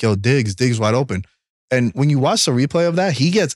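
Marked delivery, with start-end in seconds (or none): none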